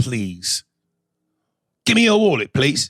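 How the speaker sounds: put-on courteous, polite English accent. Mocking the English accent as a robber asking for a wallet: polite British robber voice. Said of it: "It sounds like when they rob you, they say".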